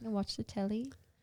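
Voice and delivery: clumsy, bad put-on British accent. Friends take turns at british accents; one speaks in a bad british accent. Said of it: "British. Accent".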